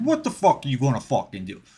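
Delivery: put-on animated, swooping, swinging New Jersey, New York accent. Retelling a joke by Joey Diaz: Joey Diaz New Jersey voice. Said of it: "downtown New Jersey, New York type of".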